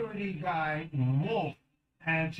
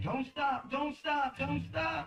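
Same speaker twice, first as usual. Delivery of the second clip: mock, very high-pitched, urgent, repeated screaming; 10 semitones higher than usual. Retelling how passengers screamed during a police chase: imitating someone screaming. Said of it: "were screaming".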